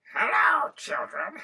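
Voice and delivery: shrill, very high, loud witch cackle. Narrating a story, the witch greets the children in a cackling witch voice. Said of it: "That was a cackle".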